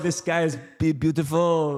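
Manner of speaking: put-on English spoken with a French accent. Quoting a remark made in English: French accent in English. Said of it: "said it in English with a French accent".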